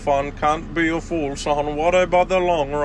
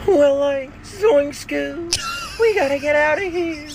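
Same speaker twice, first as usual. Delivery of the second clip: very high, goofy cartoon slacker voice; 12 semitones higher than usual. Showing the impression another man came up with, a Shaggy impression. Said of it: "here's me Shaggy impression for ya".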